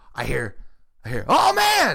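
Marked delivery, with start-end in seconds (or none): 1.3-2.0 put-on gruff exclamation, higher. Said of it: "And what was the voice you said?".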